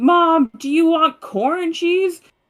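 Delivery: mock very high, loud, drawn-out yell. Retelling how they called out to Mom in the yard: retelling a yell to Mom. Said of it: "we're like yelling at her".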